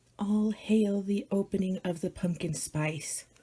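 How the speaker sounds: very soft, hushed whisper. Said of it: "Why am I whispering?".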